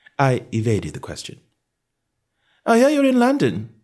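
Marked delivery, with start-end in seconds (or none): 2.7-3.6 careless, offhand throwaway, very high-pitched. The narrator remarks carelessly to a man, evading his question. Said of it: "I said carelessly".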